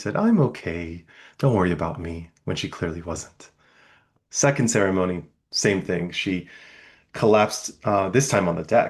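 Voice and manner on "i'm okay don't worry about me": put-on cute little Korean-accented voice. Speaker retelling what a woman said after collapsing, in a cute little Korean voice. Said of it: "in her cute little Korean voice".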